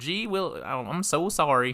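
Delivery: slow, high, drawn-out put-on Wisconsin accent. Imitating an overly friendly traveling family: imitating a Wisconsin accent. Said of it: "a Wisconsin accent for some reason".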